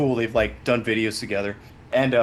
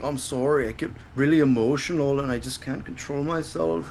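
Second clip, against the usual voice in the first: put-on sad-sack, overcome, emotional voice; 4 dB quieter than usual. Retelling what a guest on a show kept saying, imitating someone sad. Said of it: "he just like is like sad the whole time".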